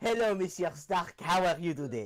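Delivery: speaking with a French accent. Wearing a Mandalorian helmet, greeting Mr. Stark in a French accent. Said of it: "It's just a French accent when you talk".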